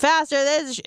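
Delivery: shouting. Retelling how fitness class instructors yell at people: imitating an instructor yelling. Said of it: "people fucking yelling at you".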